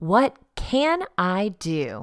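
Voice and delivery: said with conviction, slow, weighted stress on "can".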